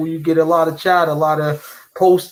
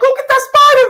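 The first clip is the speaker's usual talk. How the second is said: very high, loud put-on lady voice; 6 dB louder than usual. Mocking another speaker's reaction to a spider: imitating a lady's voice. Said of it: "you sound like a lady".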